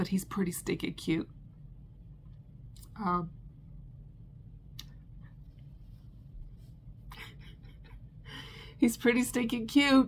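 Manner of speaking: emotional, near-whispered voice. Talking about a frog she crocheted, getting emotional. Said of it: "I don't know why I'm getting emotional".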